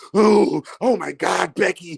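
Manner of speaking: very slow, rough, creaky put-on porn-actress voice. Retelling how women in porn videos sound: imitating women in porn videos. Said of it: "How they be like".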